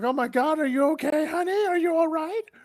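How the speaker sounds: very high, fake frantic panicked worry. Checking on someone in sudden trouble, acting panicked. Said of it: "I am actually going to uh, panic and act".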